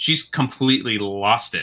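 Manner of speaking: normal talking voice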